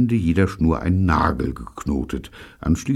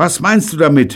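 many high, loud voices crying out at once; 12 semitones higher, 7 dB louder than usual. Narrator reads the whole group asking David at once, everyone shouting at once. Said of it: "Alle schrien gleichzeitig".

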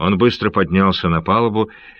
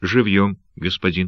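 usual speaking voice

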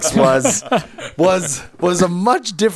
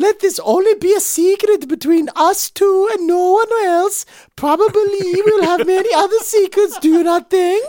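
put-on Norwegian accent, woman's voice. Quoting Belle Gunness's words to another person, doing a Belle Gunness Norwegian voice. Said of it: "now I've got to do the Belle Gunness voice".

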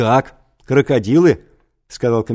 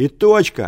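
shouted, higher pitch; 3 semitones higher than usual. A cry comes from where the most hardened troglodytes sat; shouted. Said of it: "крикнули оттуда".

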